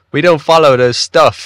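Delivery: put-on high British accent. Repeating another speaker's line back, imitating a British accent. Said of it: "I love the British accent there".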